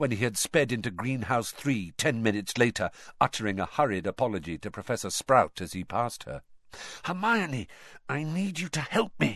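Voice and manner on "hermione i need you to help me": whispered, higher and quieter. Harry, arriving late in Greenhouse 3, speaks to Hermione; whispered. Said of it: "Harry whispered".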